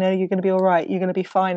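plain

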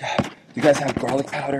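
acted breathlessness. Retelling running frantic into a pizzeria: imitating being out of breath. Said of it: "I'm, like, out of breath".

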